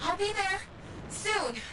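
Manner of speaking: out of breath, winded, very high voice. Telling Jax they're going inside the foundry alone, sounding winded. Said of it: "You sound winded".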